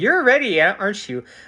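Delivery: put-on, high voice talking through laughter. Retelling the HR representative's reply when the speaker called work, imitating laughing speech. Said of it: "was like laughing, going".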